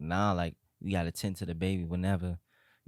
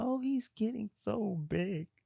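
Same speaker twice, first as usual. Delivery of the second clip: put-on boohoo blubbering, high and drawn-out crying. Retelling how the other speaker burst out crying: imitating someone crying. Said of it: "you just bust out crying".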